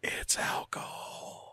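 slow, soft, secretive whisper.

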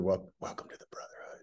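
very quiet whisper, close into the ear. Speaker retelling what a man leaned into his ear and said, retelling a whisper. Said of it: "he just whispered".

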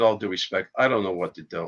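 normal talking voice

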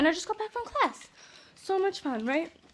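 out of breath between pants. Speaker just got back from class, panting. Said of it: "I'm panting".

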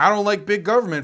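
ordinary delivery

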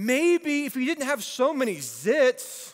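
put-on high yell with zits stretched long. Speaker retelling what a girl yelled at him from the road, retelling a yell. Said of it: "She yells out".

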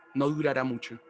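ordinary delivery

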